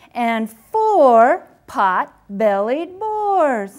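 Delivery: loud, triumphant, slow, drawn-out finish.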